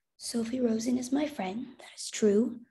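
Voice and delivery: quiet, softly spoken voice. Mama answers a soldier asking about the Rosens, speaking quietly. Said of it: "Mama said quietly".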